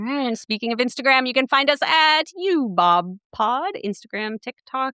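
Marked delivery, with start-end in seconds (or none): 1.3-3.7 sports announcer voice, much slower. Podcast host gives the show's social media handles, sports announcer voice. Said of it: "It was like a announcer".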